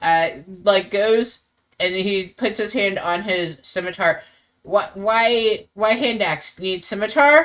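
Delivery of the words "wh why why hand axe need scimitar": put-on, high-pitched goblin character voice. Voicing the goblin friend Steve, hand on his scimitar: goblin voice. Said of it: "the Steve, the goblin friend".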